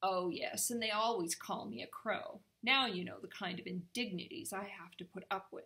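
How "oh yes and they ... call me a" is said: plain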